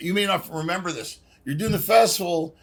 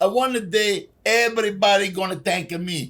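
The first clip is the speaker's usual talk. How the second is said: slow, put-on, fake Italian accent; 2 semitones higher than usual. Showing how people always mimic Italians, fake Italian accent. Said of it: "people do a fake Italian accent".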